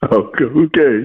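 chuckling, laughing through the words. Answering a caller's story about a condition, laughing while talking. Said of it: "Why are you laughing?".

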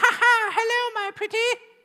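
cackling, high-pitched and loud. Retelling a dream where a witch appears beside the speaker, in a Wicked Witch of the West voice. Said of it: "I practiced that all week".

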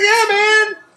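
very high-pitched, loud voice. Imitating a friend who texted, in a high-pitched voice. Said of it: "He talks high pitch?".

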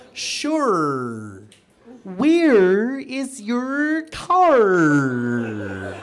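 loud, swooping, over-the-top cartoon character voice. Retelling repeating his question to a woman, in an exaggerated cartoon character voice. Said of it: "You sound like a Hanna-Barbera cartoon character".

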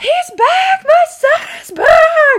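very high, elated, drawn-out joyful shout. Retelling a father screaming for his wife to come in: retold joyful screaming. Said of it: "he's like screaming for his wife to get in there like".

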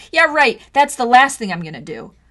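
loud, angry, scornful huffing scoff. Narrator, as Liv, answers David after he growls at her; angry scoffing laugh. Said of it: "I huffed out an angry laugh".

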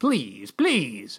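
all too pleasing, overly sweet tone. The ambassador makes a request, in an all too pleasing tone. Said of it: "in an all too pleasing tone".

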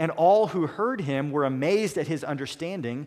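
ordinary delivery

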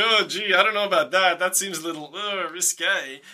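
ordinary talk, nothing marked

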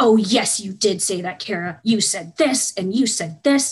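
angry, furious, raging shouted outburst. Retelling a person who flew into a rage in a coffee shop: imitating someone yelling in rage. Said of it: "he just flew into a rage and said".

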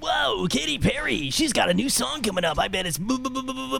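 very high, rough, wild, wacky radio DJ. Recalling 2000s radio, doing a bit in zany 2000s radio style. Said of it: "the wild and wacky and zany, wow, way radio of the 2000s".

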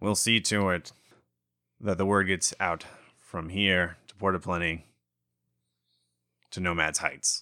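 low, nasal character voice. Game master voices a halfling character for the players, nasal but lower voice. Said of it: "It could be nasally but lower".

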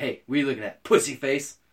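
plain

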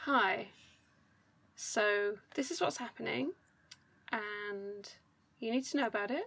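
quiet, plain, matter-of-fact delivery. Describing the character Litvak, imitating his quiet matter-of-fact voice. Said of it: "he's very quiet and he's very like".

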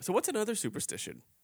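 very high-pitched podcast host style voice. Co-hosting a podcast chat, asking the next question, podcast voice. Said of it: "I put on my podcast voice".

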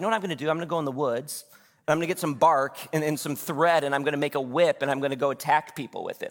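ordinary talk, nothing marked

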